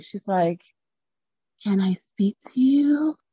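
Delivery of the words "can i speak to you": mock whisper, higher. Retelling how she quietly asked his mom: imitating someone whispering. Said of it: "what's with the whispering?".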